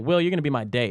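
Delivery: ordinary talk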